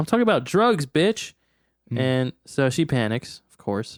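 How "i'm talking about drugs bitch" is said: put-on high, shouted voice. Retelling Jack demanding coke from her, imitating Jack's shout. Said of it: "So he shouts back".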